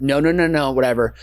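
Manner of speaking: ordinary delivery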